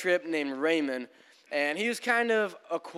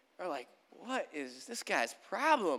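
normal talking voice

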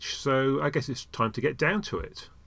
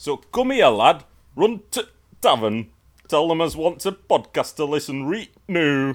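put-on northern English accent; 2 semitones higher, 6 dB louder than usual. Podcast host joking about Doctor Who's three English accents: put-on Up North accent. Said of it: "this one is definitely Up North".

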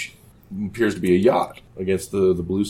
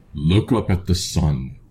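slow, drawn-out divine voice from above; 3 semitones lower than usual. A narrator voices an unseen speaker calling from the sky, in a booming voice. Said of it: "You hear a booming voice".

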